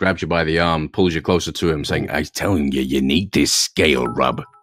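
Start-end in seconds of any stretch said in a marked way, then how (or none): 2.1-4.4 strange, low, weird merchant character voice. Game master voicing a merchant who grabs the player's arm: weird merchant voice. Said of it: "the merchant with the scrubby face and the weird voice".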